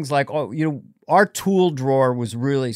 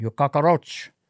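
put-on Cuban accent with shifted voice timbre. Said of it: "Al Pacino doing a Cuban accent".

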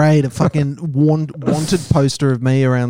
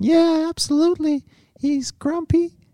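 very high-pitched put-on mimicking voice. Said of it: "My girlfriend's got quite a high-pitched voice".

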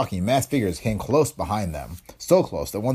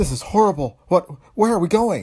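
stricken, very high raised voice, trembling with fear; 9 semitones higher, 5 dB louder than usual. Purcell, held captive by a man with a machine gun, speaks, stricken, trembling with fear. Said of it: "trembling with fear, spoke in a stricken voice".

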